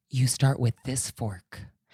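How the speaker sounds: hushed, discreet half-whisper. Retelling what a waiter said, leaning in close: imitating a half-whisper. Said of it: "whispers in my ear".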